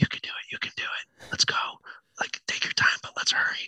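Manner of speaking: soft, coaxing, encouraging whisper. Retelling urging someone to climb up the tree: retelling a whisper.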